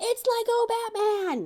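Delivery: sudden, very high, blurted yelled outburst. Retelling suddenly yelling out while watching something with others, retelling a yell. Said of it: "all of a sudden I just yelled out".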